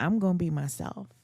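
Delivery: normal talking voice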